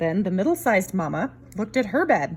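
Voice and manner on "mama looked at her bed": ordinary delivery, nothing marked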